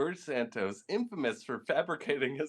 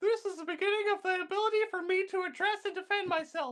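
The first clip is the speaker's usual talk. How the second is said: very high-pitched squeaky comic made-up voice. Voicing a man the speaker never heard talk, in a put-on fun voice. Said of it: "I'm just gonna do a fun voice here".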